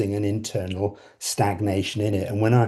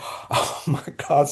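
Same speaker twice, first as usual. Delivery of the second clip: put-on thrilled, excited gasping reaction; 6 semitones higher than usual. Retelling hearing the winner announced: imitating own excited gasp. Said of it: "all excited".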